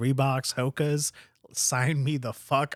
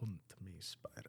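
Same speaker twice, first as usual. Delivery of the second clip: accent from Transylvania; 7 semitones lower, 22 dB quieter than usual. Asked to read a line in a Russian accent, the speaker lands on a Transylvanian accent. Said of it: "that's Transylvanian".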